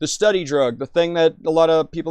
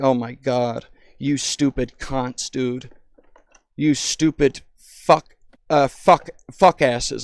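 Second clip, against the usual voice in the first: mock angry, slow, furious rant; 4 semitones lower than usual. Speaker acting out how they would rant at people in online forums, mock-angry rant. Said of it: "I would get so fucking pissed".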